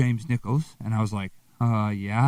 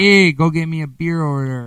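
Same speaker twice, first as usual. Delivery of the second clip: put-on loud, nasal, drawn-out small-town Wisconsin accent; 5 semitones higher, 6 dB louder than usual. Imitating relatives back home: imitating relatives' Wisconsin accent. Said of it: "all my relatives talk like this".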